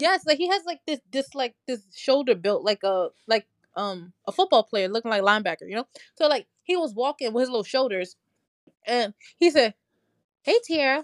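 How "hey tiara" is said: self-assured, cocky, swaggering big-guy voice. Retelling Mark greeting her at the aquarium: Mark impression. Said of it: "Give me your best Mark impression".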